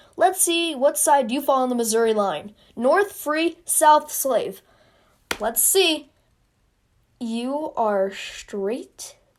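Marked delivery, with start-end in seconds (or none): none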